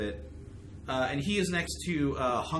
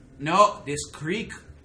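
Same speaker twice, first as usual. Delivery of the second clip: put-on weird Quebec accent; 3 semitones higher, 8 dB louder than usual. Recounting a man's words while attempting his accent, weird quebec accent. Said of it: "here I gotta do my best weird Quebec accent".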